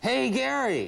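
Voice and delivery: yelling loudly as if across a distance.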